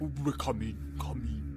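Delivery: soft, low, spooky ghostly voice.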